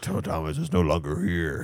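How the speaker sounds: low, soft demonic voice.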